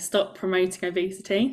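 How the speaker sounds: ordinary talk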